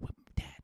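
soft, quiet, unvoiced whisper. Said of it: "come up to me and whisper".

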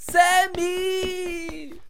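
put-on shrill girlish screaming. Calling for Sammy during a burrito emergency: shrill girlish yelling. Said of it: "Warum schreist du denn schon wieder so weibisch rum".

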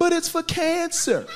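put-on very high, stretched-out, drawn-out screech. Retelling being pushed out onto the sidewalk by security: imitating himself screaming. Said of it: "as I'm screaming".

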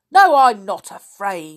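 very loud, scornful, scoffing delivery. Narrating an old fellow's reply to a question, scornful. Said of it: "said the old fellow scornfully".

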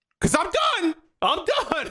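mock, very high, scolding yell. Imitating a parent yelling at their kids: imitating a parent yelling. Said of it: "So I'm yelling at my kids".

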